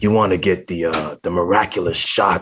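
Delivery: acted rasping voice. Talking about an actor from Alien 4, quoting him: raspy Michael Wincott voice. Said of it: "he has the raspy voice and he's like".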